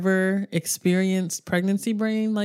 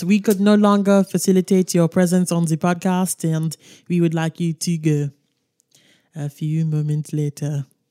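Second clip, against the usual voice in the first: loud, raised, put-on French accent; 5 dB louder than usual. Podcast host jokingly firing a co-host on behalf of the board, in a french accent. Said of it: "in a French accent".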